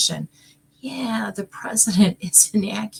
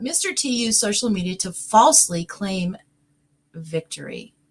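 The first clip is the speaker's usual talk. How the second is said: speaking through stifled giggles, barely holding back laughter. Reading a line aloud, holding back a laugh. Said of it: "I'm trying not to laugh".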